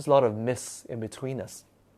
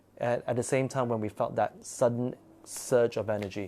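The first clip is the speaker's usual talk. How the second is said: ordinary talk, nothing marked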